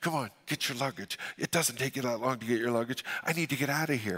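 quiet mumbled delivery. Retelling waiting for passengers to get their luggage after landing: muttered under breath. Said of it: "under my breath".

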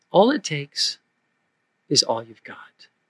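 soft, hushed half-whisper, barely any breath. Speaker retelling an answer that came after awkward silence: God's half-whisper. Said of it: "the whisper of God came back".

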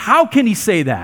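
indignant, zealous, angry and heated. Showing how the arguing crowd sounded in the synagogue: angry raised voice. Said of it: "picture them raising their voices".

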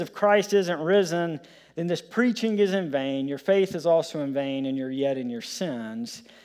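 ordinary talk, nothing marked

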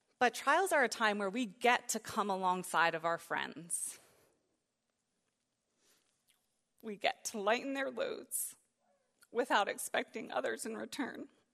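tearing up, near tears. Speaking to a room about friends coming alongside in trials, tearing up. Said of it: "I'm tearing up".

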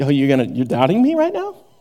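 put-on, a little lippy, mouthy, swooping delivery. Imagining a lippy reply to a doubting questioner: imitating Jesus being lippy. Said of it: "Jesus is feeling a little lippy".

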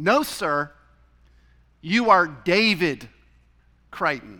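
put-on snippy, grumpy, snarky, cranky tone. Retelling what the check-in clerk said: imitating a snarky, cranky tone. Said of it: "in a rather snarky, cranky kind of a way".

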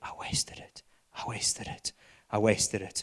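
muttering under breath. Retelling an old grandpa hobbling down the aisle: imitating muttering under breath. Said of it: "he's just saying under his breath".

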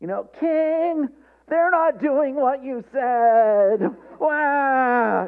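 very high whine with a drawn-out wah. The speaker acts out the accusers complaining to the king, in a mock-whiny tattling voice. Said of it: "You could almost hear the whine in their voices".

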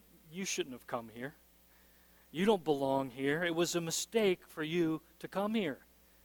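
hushed, tempting half-whisper, close and intimate. Acting out Satan half-whispering doubts to a listener: half-whispering as Satan. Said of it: "And Satan is whispering".

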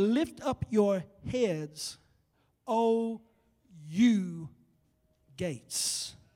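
slow, drawn-out, word-by-word reading. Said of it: "read it slowly".

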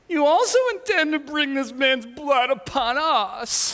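put-on high, drawn-out whiny toddler voice. Imagining the second line in your greatest whiny toddler voice. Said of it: "2-3-year-old, 4-year-old whiny voice".

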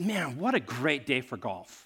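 mock bright, sunny, very cheerful, swooping tone. Retelling what a man from the next car said on arrival, imitating a cheerful man. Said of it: "just very cheerful, very very very cheerful".

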